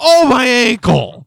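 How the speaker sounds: very high, very loud yelled outcry. Acting out the usual reaction whenever he does anything: imitating own yell. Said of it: "I do yell".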